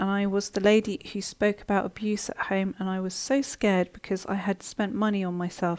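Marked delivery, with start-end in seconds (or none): none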